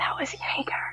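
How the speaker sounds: whispering. During the game, the speaker whispers into a fellow player's ear: whispering. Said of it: "I'm gonna whisper into Kevin's ear".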